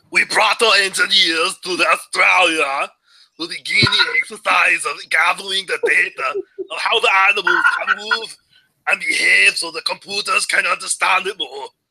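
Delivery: lousy Austrian accent. Do your impression of someone doing a very shitty Arnold Schwarzenegger accent. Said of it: "my impression of someone doing a very shitty Arnold Schwarzenegger accent".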